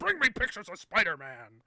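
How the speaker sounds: loud, high bellow with big swooping pitch swings. Imitating J. Jonah Jameson demanding pictures: J. Jonah Jameson voice. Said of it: "Jonah Jameson".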